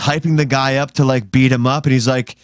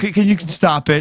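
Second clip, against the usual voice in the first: put-on angry, mad voice, higher pitch; 5 semitones higher than usual. Retelling what an embarrassed person said: imitating an angry complaint. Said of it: "He was just so mad".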